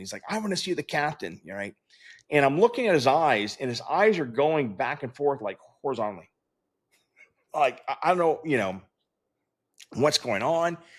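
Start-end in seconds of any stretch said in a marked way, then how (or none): 0.3-1.4 mock insistent, high, mild demanding half-shout. Retelling a passenger on a flight demanding the captain: imitating a passenger yelling. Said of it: "he starts yelling".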